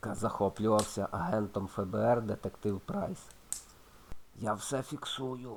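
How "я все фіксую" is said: hushed half-whisper under the breath. Detective Willis, noting down an FBI agent's interrogation of a suspect, half-whispers. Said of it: "пошепки прошепотів детектив Вілліс".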